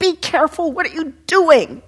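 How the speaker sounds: high-pitched, loud yell. Retelling how someone yelled at a passing skateboarder: imitating someone yelling. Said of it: "she started yelling at him".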